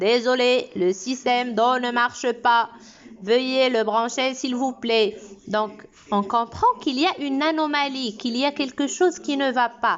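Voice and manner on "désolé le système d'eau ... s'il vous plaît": robotic, mechanical, machine-programmed announcement voice. Imitating how robots speak when reporting a fault, in a robotic voice. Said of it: "les robots ne parlent pas comme nous ... Donc ils parlent comme ça".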